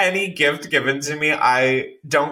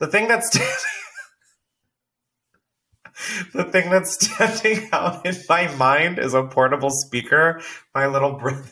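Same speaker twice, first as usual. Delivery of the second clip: words breaking up with laughter; 4 semitones higher than usual. Naming a gift from a little brother, laughing while talking. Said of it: "Why are you laughing?".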